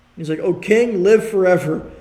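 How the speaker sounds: ordinary delivery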